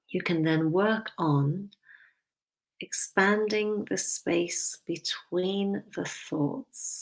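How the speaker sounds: slow, unhurried, deliberate, every word weighed. Speaker guiding a mindfulness practice, stressing a key point; speaking slowly. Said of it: "I say that slowly".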